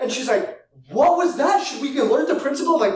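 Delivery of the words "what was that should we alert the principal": high, stunned, alarmed, shocked voice. Retelling how a mom reacted at school pickup: imitating a shocked mom.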